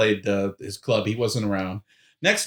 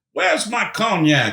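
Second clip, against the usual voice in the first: play-acted high, shrill hollering yell; 9 semitones higher, 3 dB louder than usual. Retelling how an eighty-eight-year-old on stage kept calling out: imitating someone yelling. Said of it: "every so often he's yelling".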